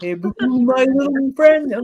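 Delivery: put-on old cartoon bear character voice. Chatting about bears, a speaker imitates the cartoon bear: Yogi Bear impression. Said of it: "What did he used to say?".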